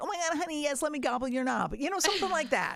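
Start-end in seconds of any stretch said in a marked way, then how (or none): 0.0-1.7 put-on sweet, cutesy voice. Showing another speaker how to play the wife in a role-play: put-on cute voice. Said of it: "get a cute voice on and just be like".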